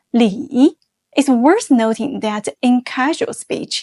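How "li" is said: third tone on Li, dipping low then rising. Teaching a last name's third tone: dipping then rising tone on li. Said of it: "pronounced with the third tone. Starts low, deep, even lower, then rise higher. Like this".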